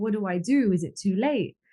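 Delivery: ordinary delivery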